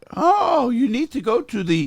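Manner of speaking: bad fake Indian accent, very shrill, very high, loud. Retelling a phone call with some guy from India: bad fake Indian accent. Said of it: "worst accent I've ever heard".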